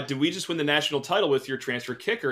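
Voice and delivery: ordinary talk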